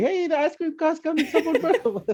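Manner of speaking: high, excited yelling call-out.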